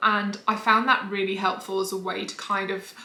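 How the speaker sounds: ordinary delivery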